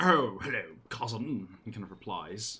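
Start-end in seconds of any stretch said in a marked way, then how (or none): 0.0-1.5 put-on croaky old voice, English accent. Playing a Thorny Log character greeting his cousin, croaking old English voice. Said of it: "they're all really just warty old English guys now".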